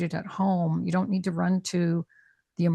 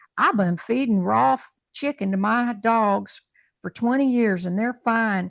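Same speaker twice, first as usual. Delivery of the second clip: put-on Texan accent, raised voice; 4 semitones higher, 5 dB louder than usual. Quoting a client who came for muscle-testing training, in his Texan voice. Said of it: "in his Texan voice".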